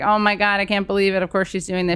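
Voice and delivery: plain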